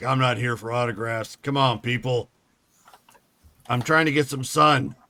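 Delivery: put-on gruff, grumbling, dismissive voice. Retelling a voice heard from a crowd: imitating a gruff voice. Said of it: "you hear this kind of gruff voice like".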